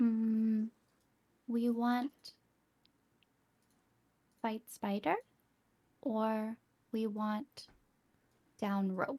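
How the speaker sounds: speaking in a hushed whisper. A tabletop player speaks in character, wary that spiders are watching: whispering. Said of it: "We're just gonna whisper".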